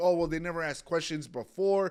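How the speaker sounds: plain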